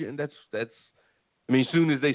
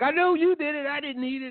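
put-on high-pitched children squabbling. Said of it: "Were you, like, yelling at each other?".

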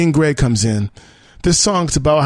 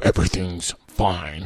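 very deep, soft, sinister voice; 8 semitones lower, 7 dB quieter than usual. Describing how an album opens, the speaker voices Eltron's reply: deep sinister Eltron voice. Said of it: "That's the deep voice he has. Really kind of sinister".

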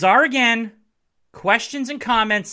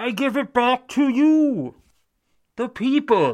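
very slow villain voice, every word stretched; 4 semitones higher than usual. Tell the fans you are letting them determine the big questions, in a Bane impression. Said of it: "Was that a good Bane impression?".

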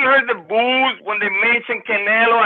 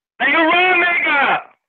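yelling, much higher pitched; 8 semitones higher than usual. Speaker calls out to the others in the conversation, yelling. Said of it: "We can't hear you when you yell that much".

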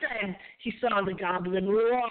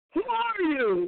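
increasingly agitated, pitched-up voice; 9 semitones higher than usual. Ichabod, getting no reply, repeats his demand, still more agitated. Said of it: "repeated his demand in a still more agitated voice".

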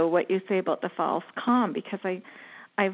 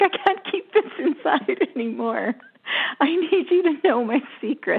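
high, near-tearful voice, on the verge of crying; 7 semitones higher, 3 dB louder than usual. Retelling blurting out a secret to a man, retelling almost crying. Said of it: "I was like almost crying".

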